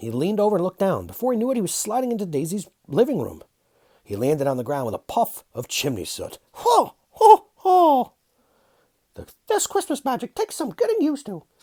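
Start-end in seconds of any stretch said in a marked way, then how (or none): 6.5-11.4 pitched way up, raised. Narrator reading Mickey's line after his chimney landing, Mickey Mouse voice. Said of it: "[name]'s Little Helper. A [name] Christmas Story. / he said".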